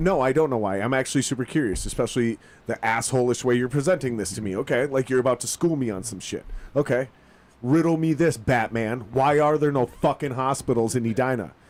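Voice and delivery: snarky, smart-aleck, sarcastic tone. Retelling his unspoken reply to a girlfriend's dad, imitating his own snarky attitude. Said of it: "but this is the attitude".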